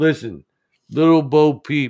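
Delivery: put-on Philadelphia accent. Reading a nursery rhyme aloud as Rocky: Rocky voice. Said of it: "she wants me to read it as Rocky".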